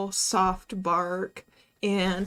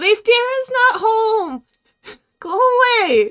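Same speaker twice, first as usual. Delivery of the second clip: super high-pitched, shrill, very loud voice; 14 semitones higher, 11 dB louder than usual. Game master answering a player calling for the druid, in a super high-pitched voice. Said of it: "just a super high pitched voice".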